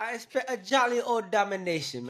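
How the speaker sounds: very high-pitched, poorly done put-on British accent. Predicting how the Bears game will go: bad put-on British accent. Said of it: "My my my British accent suck".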